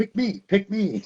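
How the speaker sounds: talking cartoon donkey voice, pitched very high. Recalling the Shrek DVD menu: Donkey from Shrek voice. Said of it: "Eddie Murphy is the donkey".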